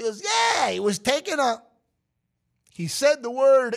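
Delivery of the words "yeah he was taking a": put-on Brooklyn accent, higher pitch. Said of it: "delivering the news in his very Brooklynese".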